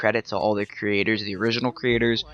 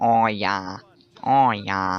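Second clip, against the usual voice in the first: very slow, stretched-out, bad Boston accent. Hearing Boston accents around them, the speaker attempts a bad Boston accent from Ted. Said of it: "I can only do the thing from Ted".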